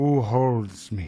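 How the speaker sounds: voice with a wavering vibration. Voicing what speaks from the opened crystal orb: vibrating voice. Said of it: "it's like a kind of vibrating voice coming off of it".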